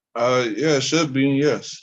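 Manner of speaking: talking around a mouthful of food. Answering a question about paying a fine, talking while chewing. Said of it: "Are you eating".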